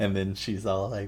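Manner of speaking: ordinary talk, nothing marked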